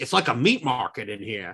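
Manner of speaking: put-on very strong, leaned-into Australian accent. Describing a movie scene, quoting young Gibson's line in an Australian accent. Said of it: "who has way more of an Australian accent".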